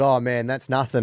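ordinary talk, nothing marked

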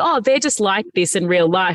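ordinary talk

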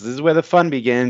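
ordinary delivery

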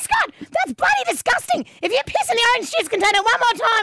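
very high, shrill screaming scold. Recounting her mum shouting at a man from the toilet, imitating mum screaming. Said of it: "my mum's screaming at him from the toilet going".

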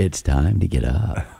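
very low, slow smart-speaker assistant voice. Speaker shows how a little voice might wake them, in an Alexa voice. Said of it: "That was my Alexa voice".

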